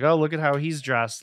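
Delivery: ordinary delivery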